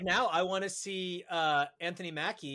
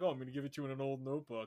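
smooth put-on dealer voice, lower and quieter; 5 semitones lower, 6 dB quieter than usual. Imitating Rick Jones as a smooth college weed seller: smooth Rick Jones voice. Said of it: "he's real smooth about it".

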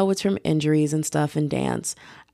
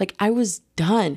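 ordinary delivery

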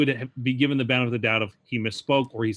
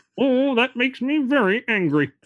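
very high, bad cartoon voice; 12 semitones higher, 3 dB louder than usual. Doing a cartoon impression for the others: horrible Marvin the Martian impression. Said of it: "that is a horrible impression".

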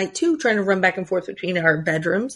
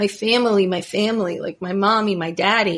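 put-on small child sobbing, crying out. Retelling how a child cried alone in his room: imitating a crying child. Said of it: "he was crying, going".

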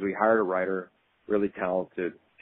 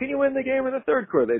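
locker-room style scream, pitched higher. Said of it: "he would scream in the locker room".

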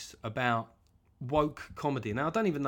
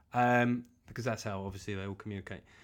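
plain

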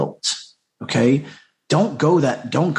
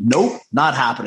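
put-on military-style commanding voice; 2 semitones lower than usual. Retelling his own reply to his crying wife: imitating own Marine Corps manner. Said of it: "my Marine Corps came out of me".

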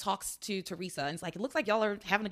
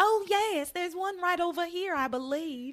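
put-on high, ridiculous, laid-on Southern belle accent; 8 semitones higher than usual. Recounting a scene to another speaker, quoting Teresa in a Southern belle accent. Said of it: "like a Southern belle".

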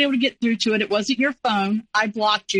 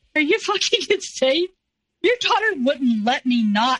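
mock incredulous laugh, much higher; 6 semitones higher than usual. Retelling a man's reply during an argument; retelling an incredulous laugh. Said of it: "he gets this funny like laugh".

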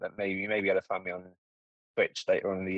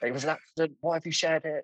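higher-pitched put-on scream; 9 semitones higher than usual. Retelling screaming at everyone in a channel: imitating himself screaming. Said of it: "I'm absolutely screaming at everyone in the channel".

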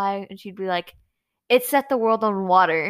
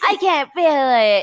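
put-on complaining voice, higher and louder; 4 semitones higher, 5 dB louder than usual. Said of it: "so would be like".

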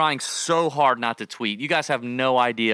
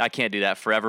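plain

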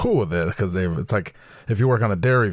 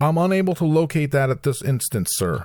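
stiff, stilted, officious radio talk, pitched up; 8 semitones higher than usual. Imitating workers on walkie-talkies: imitating stilted official speech. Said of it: "stilted, official, weird".

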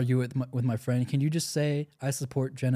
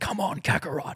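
mock screaming in a put-on voice; 4 semitones higher than usual. Describing an anime gym playlist, imitating Vegeta screaming in your ear. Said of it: "screaming in your ear".

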